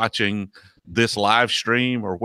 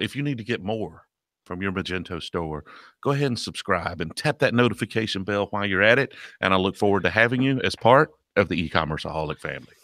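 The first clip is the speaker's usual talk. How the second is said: silky, smooth radio announcer voice; 3 dB quieter than usual. After being praised, the speaker repeats his channel outro in his radio voice. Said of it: "I start getting into my radio voice".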